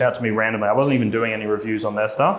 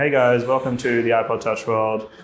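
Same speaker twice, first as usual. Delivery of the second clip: flat, level monotone delivery with no personality. Recreating how they sounded when starting their videos: flat monotone. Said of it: "I was just like monotone".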